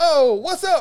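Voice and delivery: friendly, high, loud shouted delivery.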